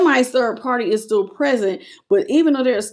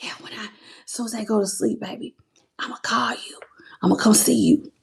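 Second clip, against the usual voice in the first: mock sneaky whisper, quieter; 5 dB quieter than usual. Acting out someone secretly texting behind their partner's back, imitating a sneaky whisper. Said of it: "You think you gonna whisper with me".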